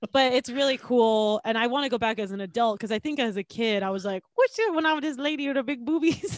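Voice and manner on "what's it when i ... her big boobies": odd, wonky, high put-on Irish accent. Recalling a childhood visit to Dollywood, quoting their kid self in a weird Irish accent. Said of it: "Is that a weird Irish accent you had?".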